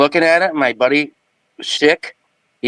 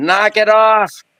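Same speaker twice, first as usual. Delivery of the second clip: acted, high-pitched little-girl yell; 7 semitones higher than usual. Retelling the moment something came within three feet: retelling a girlish yell. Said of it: "I yelled like a little girl".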